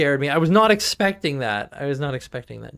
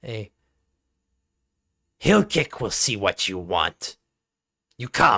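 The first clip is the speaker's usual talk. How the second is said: low, snarled-out goblin voice; 4 semitones lower than usual. Voicing the goblin the listeners had seen before as it speaks up: snarling goblin voice. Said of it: "just kind of snarls out".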